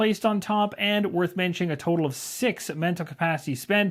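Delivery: ordinary delivery, nothing marked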